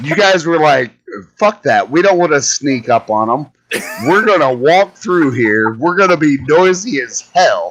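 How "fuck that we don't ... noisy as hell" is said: plain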